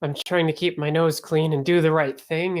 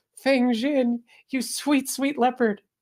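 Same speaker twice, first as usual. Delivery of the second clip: saccharine, sugary, high lovey-dovey sweetness; 8 semitones higher than usual. Lena comes out of the tea house and greets Fang Jin: saccharine Lena voice. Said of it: "sickening and saccharine and right out of a romance novel".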